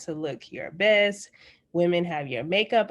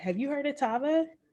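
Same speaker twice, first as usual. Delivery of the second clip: genuinely intrigued, curious, pitched-up delivery; 8 semitones higher, 3 dB quieter than usual. Showing how to ask someone about a detox, in a really curious tone. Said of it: "really get like really curious in your voice".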